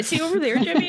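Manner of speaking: high, laughing mock voice.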